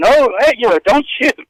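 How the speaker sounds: loud yelling.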